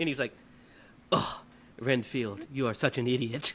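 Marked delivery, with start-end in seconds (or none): 1.1-3.5 slow, dragged-out, critical vampire drawl. Retelling a film scene where Dracula critiques Renfield: imitating Dracula critiquing. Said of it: "Dracula's just outside waiting".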